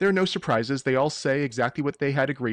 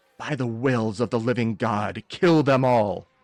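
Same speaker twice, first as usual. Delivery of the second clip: shrieking through clenched teeth; 2 semitones lower than usual. A game master voices the enemy at the back pointing at the party, shrieking through clenched teeth. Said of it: "shrieking through clenched teeth".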